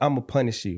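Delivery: ordinary delivery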